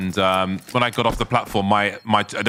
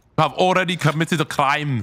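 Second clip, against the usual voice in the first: put-on German accent, higher pitch; 6 semitones higher than usual. Trying out an accent and asking the others what they think, in a fake German accent. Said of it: "That's my that's that's my German accent".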